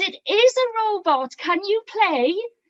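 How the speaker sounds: friendly, gentle, coaxing, encouraging tone. Speaker demonstrating how to ask someone if they can play, smiling while asking. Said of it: "I am smiling, I am nodding".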